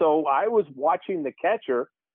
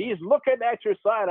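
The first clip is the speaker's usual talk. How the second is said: high-pitched, called-out yell; 6 semitones higher than usual. Retelling the pitcher's reply during a baseball game: imitating someone yelling. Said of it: "And he yelled".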